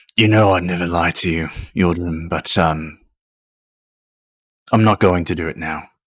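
loud, gruff, grumbling voice. Voicing a character who shows his scarred neck: grumbly voice. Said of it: "dip slightly into a more grumbly voice".

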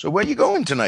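put-on Louisiana Cajun accent, pitched high. Quoting local cops on a movie set, imitating a Cajun accent. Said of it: "they all had that Cajun accent".

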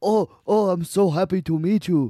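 loud, high, put-on Japanese accent. Joking about how Robin Williams greeted people, imitating Robin Williams doing a Japanese voice. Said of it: "i just assume he did a japanese voice".

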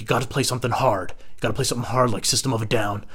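ordinary delivery

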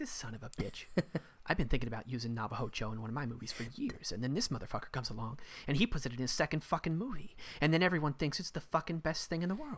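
quiet, low-key, muttered put-on voice. Acting out Tarantino's reaction to another director's second movie, in a Tarantino impression. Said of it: "That is a great Tarantino impression".

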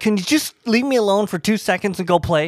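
mock harsh snapping. Retelling what was said to the kids: imitating own aggressive talk. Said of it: "And I am talking all aggressive like that".

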